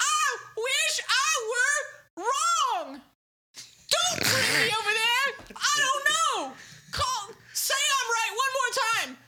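very high, loud, shrill voice, pushed way up. Speaker offering to imitate the listener's aunt: impression of the listener's aunt. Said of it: "I can do an impression of your aunt. It sounds like this".

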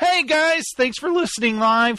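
high voice cracking mid-line. Thanking the chat room listeners for listening live: voice cracking. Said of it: "My voice just cracked again".

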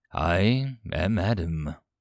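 low, rough, gravel-edged voice. Reading a story aloud, a man just woken answers: gravelly voice. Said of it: "responded in a gravelly voice".

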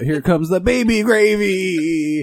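high, slow, drawn-out yell. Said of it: "I always yell out".

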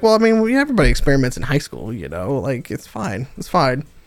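put-on matter-of-fact deadpan, low and swooping. Retelling how a man looked at you and answered; mock deadpan delivery. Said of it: "looks at you deadpan and he's like".

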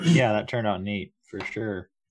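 unenthusiastic, unexcited, no excitement behind it. Agreeing that a photo turned out neat: flat, unenthusiastic. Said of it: "Sounds so enthusiastic".

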